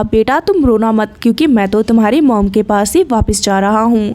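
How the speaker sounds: ordinary delivery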